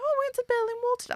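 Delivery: put-on very high, fast, posh British girl accent. Imitating girls in the dorm on the phone to family, imitating proper british girls. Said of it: "proper, like, da-da-da, you know, uh, British girls".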